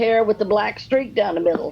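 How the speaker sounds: ordinary delivery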